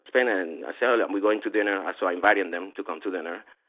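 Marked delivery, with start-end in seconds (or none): none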